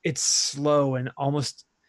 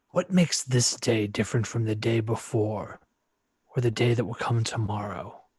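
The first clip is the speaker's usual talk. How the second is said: layered rustling spirit voice like scraping wood, lower; 3 semitones lower than usual. Speaking as Bazakor, close to the mic, a voice like scraping wood. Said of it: "close to the mic to speak as Bazakor".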